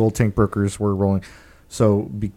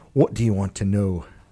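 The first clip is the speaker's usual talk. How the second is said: put-on Scottish accent, quieter; 3 dB quieter than usual. Game master voicing a dwarf after a diplomacy check, Scottish accent. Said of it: "she slipped into a scottish accent".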